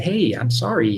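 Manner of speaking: usual speaking voice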